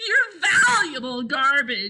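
loud, high shout broken up by laughter. [name] teases Henry about his watchdog, shouted. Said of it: "shouted [name]".

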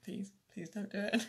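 put-on pleading. Telling listeners about a bang in the house, acting out pleading with the house ghost. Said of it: "I'm literally sat here going".

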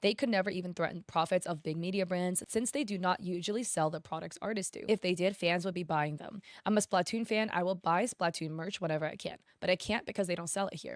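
ordinary talk

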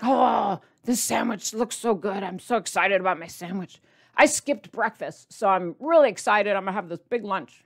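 play-acted eager, excited, gushing run-on babble. Imitating a husband talking about his lunch: imitating husband's excited blabbing. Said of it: "blabbing on and on about being so excited".

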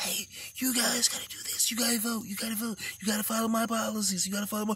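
put-on barely audible, hushed old-man whisper. Imitating an old man at his press conferences, imitating him whispering. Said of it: "He get the whispering".

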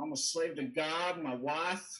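put-on Texan accent on every word. Quoting a man who opened with shocking statements, in a Texan accent. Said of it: "he had this like Texan accent".

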